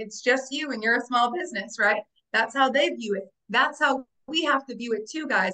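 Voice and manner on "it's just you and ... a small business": ordinary talk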